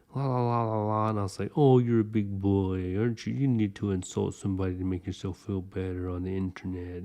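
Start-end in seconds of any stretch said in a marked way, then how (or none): 1.6-7.1 mocking, condescending, belittling, taunting tone. Retelling an online argument, the speaker quotes their reply to an insulting player: retelling a mocking tone. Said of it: "I was just mocking him and trolling him".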